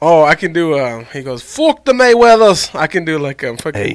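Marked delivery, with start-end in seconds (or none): 1.4-2.7 shrill, loud, very high put-on Irish accent. Among friends trading accents, retell what a man once said, in an irish accent. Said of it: "is that Irish?".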